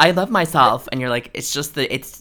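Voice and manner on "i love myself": put-on very loud, high-pitched New York accent. Imitating how Lisa Barlow says things: Lisa Barlow impression. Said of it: "she does sound very New York".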